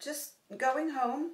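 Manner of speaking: breezy, offhand tone. Reading a novel aloud, a woman answers a man touching her hair: casual. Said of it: "as casually as possible".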